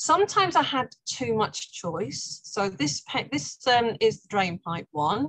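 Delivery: slow, careful, reined-in delivery. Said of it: "I'm gonna slow down 'cause I'm talking too fast".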